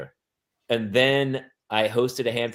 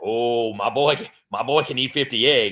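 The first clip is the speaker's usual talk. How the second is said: put-on crazy-sounding voice. Showing the crazy voice people recognize, George Kennedy crazy voice. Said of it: "every time I do crazy voice".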